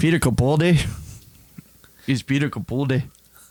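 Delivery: put-on, attempted Scottish accent. Naming the Doctor Who actor, in an attempted Scottish accent. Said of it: "You trying to do a Scottish accent?".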